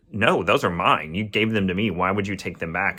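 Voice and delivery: ordinary delivery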